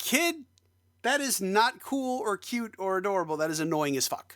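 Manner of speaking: irritated, fed-up tone. Retelling what was thought while watching a show: imitating own irritated remark. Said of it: "I was just irritated by that".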